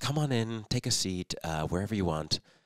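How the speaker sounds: imitated nice, calm, kind voice. Retelling how a judge greeted a client: imitating a judge's nice calm voice. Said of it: "in a very nice, calm voice".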